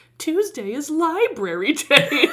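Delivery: contemptuous, despising, disdainful, drawn out, pitched high. Speaker repeats a woman's line, praising how she said it, imitating a disdainful tone. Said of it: "she just despises Ralph for going to the library".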